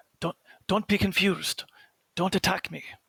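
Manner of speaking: loud theatrical stage whisper. Speaking in character to allies so they don't attack: stage whisper. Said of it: "like a stage whisper to them".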